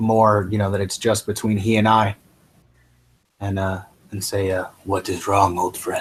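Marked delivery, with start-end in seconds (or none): 4.8-6.0 whispering. Quietly asking a troubled companion what is wrong: whispering to a friend. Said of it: "kinda whisper to him".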